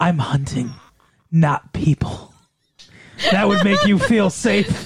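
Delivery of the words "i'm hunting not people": slow, drawn-out whisper, very close. Acting out a stranger leaning in on the street: imitating a whisper. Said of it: "leaned in and, and whispered in your ear".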